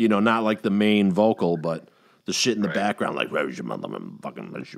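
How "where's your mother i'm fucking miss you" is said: hushed, very deep, gravelly, rasping demon growl. Describing the background voices of a possessed person: demon voice. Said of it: "With the demon voice coming out of it".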